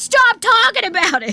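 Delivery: acted-out yelling. Retelling a two a.m. argument, quoting the man they argued with: retelling a yell. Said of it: "we're like yelling at each other".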